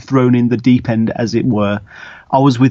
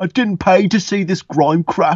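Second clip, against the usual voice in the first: rude, loud heckling yell; 6 semitones higher than usual. Retelling what a heckler in the crowd shouted: imitating a heckler shouting.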